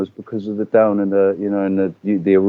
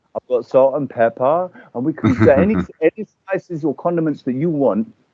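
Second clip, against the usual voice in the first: put-on childlike, kiddish, pitched-up voice; 6 semitones higher than usual. Retelling own past reply to a doubter: imitating own childlike retort. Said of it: "I came back as more childlike".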